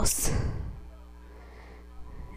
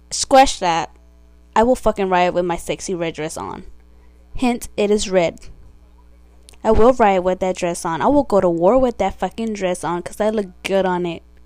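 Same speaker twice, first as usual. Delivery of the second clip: normal talking voice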